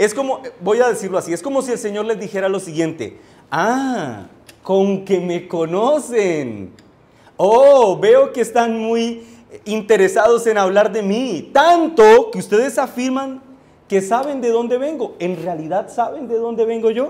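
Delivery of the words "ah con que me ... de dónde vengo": put-on sarcastic feigned interest, drawn-out "ah". Acting out a reply to men who claim to know his origin: ironic tone. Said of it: "cargada de un tono irónico".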